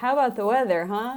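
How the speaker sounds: stiff, mechanical, robot-like delivery. Retelling a TV episode scene, imitating a robotic man. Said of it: "the guy's like a robot".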